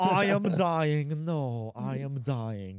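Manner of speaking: slow, loud, drawn-out, hammy overacted death line.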